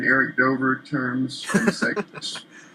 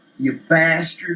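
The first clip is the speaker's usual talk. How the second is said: Southern US accent pronunciation of the word bastard; 4 semitones higher than usual. Comparing how the word is said in the South of the States, Southern US accent. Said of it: "in the States, it's more like".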